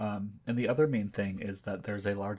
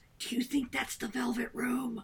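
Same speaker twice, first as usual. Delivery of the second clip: high-pitched stage whisper. Player's character asking a companion a question, in a stage whisper. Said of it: "I whisper in a stage voice".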